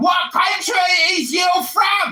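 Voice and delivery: high, shouted, obnoxious, annoying British accent. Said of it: "my Diali G accent".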